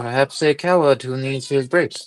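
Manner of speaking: muttering under the breath. Voicing a character who mocks the group: muttering under his breath. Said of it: "And under his breath".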